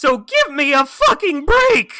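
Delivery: shrill, booming, very loud yell that cracks. Recalling a scene where he yells at Kenny, imitating Ben's cracking yell. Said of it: "he's yelling at Kenny because his his voice cracks so much".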